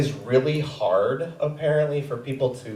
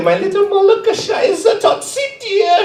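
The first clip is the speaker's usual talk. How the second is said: very high, slow, put-on German accent; 5 dB louder than usual. Quoting the pet name she would call me, put-on German accent. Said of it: "She didn't have a German accent, but I like to do that anyway".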